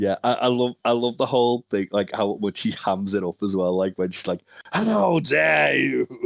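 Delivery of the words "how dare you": mock raspy, high, rough shrieking cry. Retelling a wrestler's reaction to a two count: imitating a scream. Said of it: "screaming at him".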